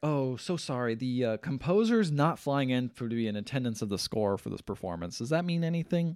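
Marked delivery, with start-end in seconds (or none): none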